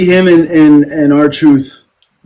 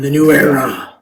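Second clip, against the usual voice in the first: delivered like a wrestler's promo. Quoting a yearly catchphrase: Triple H impression. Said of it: "I can't do Triple H".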